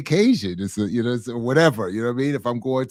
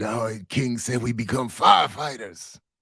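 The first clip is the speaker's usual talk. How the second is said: raspy put-on voice. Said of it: "in that raspy voice".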